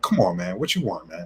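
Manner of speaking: mock-frustrated voice. Telling how he answered a man in another country, retelling a frustrated reply. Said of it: "frustration in my voice".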